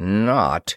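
muttering between the teeth. Hearing the queen's announcement, a man responds, muttered between the teeth. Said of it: "Ross muttered between his teeth".

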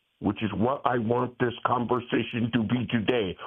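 plain

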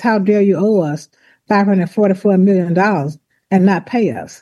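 usual speaking voice

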